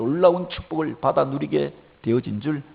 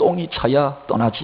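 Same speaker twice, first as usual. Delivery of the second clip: mock fed-up, irritated, annoyed retort; 4 dB louder than usual. Retelling a bus driver's reply to an impatient passenger, in a mock-irritated voice. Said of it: "짜증 섞인 목소리로".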